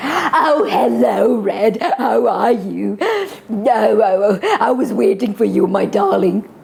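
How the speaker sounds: slow, husky, sweet-talking voice. Showing how to read the wolf's lines to Red, in a husky wolf voice, sweet. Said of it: "still have that husky wolf voice".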